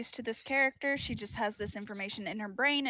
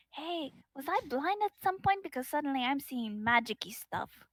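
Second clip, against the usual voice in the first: whispering in character; 3 semitones higher than usual. Voicing a character in the bar who whispers to Lorcan: whispering in character. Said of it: "kind of whispers to him".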